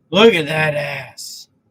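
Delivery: booming, very loud, boisterous blurt. Retelling a coworker's remark on a walk: imitating a loud, boisterous voice. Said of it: "he has a very loud, boisterous voice".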